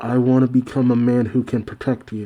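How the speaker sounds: normal talking voice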